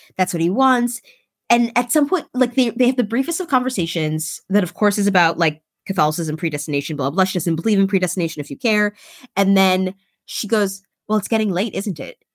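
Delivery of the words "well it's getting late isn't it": very schoolmarmish, prim, proper tone. Retelling a character's line ending the evening: imitating a school-marmish tone. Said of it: "in a very school marmy way".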